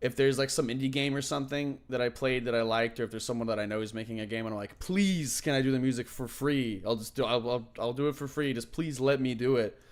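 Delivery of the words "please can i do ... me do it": put-on begging, pleading voice. Retelling asking to make game music for free: imitating own begging.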